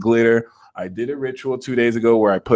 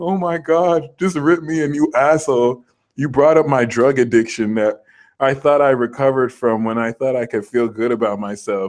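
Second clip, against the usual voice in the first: put-on sobbing, broken down in tears. Acting out a person who was broken down crying: mock crying. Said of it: "the people Virgo broke down crying".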